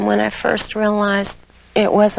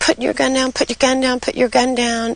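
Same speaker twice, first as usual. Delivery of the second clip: put-on urgent, pressing yelling, repeated over and over; 4 semitones higher than usual. Recounting a shooting, you act out men yelling at a man with a gun, imitating someone yelling. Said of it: "they yelled".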